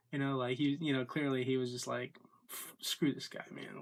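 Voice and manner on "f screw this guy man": exasperated, pissed-off, fed-up, annoyed outburst. Retelling an online opponent's reaction during a fight: imitating someone pissed off. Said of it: "he just sounds pissed".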